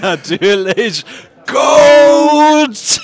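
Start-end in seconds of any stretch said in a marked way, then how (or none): 1.5-3.0 very high, very loud shout, "Coach" drawn out. Retelling spotting the coach at the bottom of the stairs, retelling calling out.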